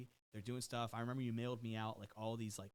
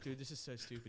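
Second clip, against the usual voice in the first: ordinary talk, nothing marked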